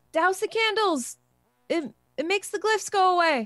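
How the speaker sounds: loud yelling in a character voice. Shouting a warning to the others to douse the candles: shouting in character. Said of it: "I'll shout".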